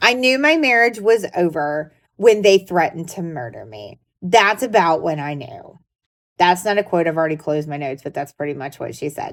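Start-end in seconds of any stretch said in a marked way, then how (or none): none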